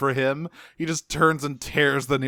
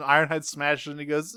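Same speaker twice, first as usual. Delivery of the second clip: ordinary talk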